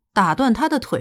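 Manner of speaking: ordinary delivery, nothing marked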